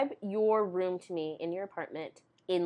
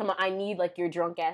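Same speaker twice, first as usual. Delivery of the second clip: ordinary delivery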